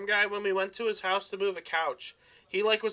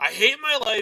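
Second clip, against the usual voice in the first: mock grumpy complaining tone, louder; 5 dB louder than usual. Imitating a coworker who gets grumpy before lunch: grumpy hungry complaining. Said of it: "almost unbearable 'cause he's like".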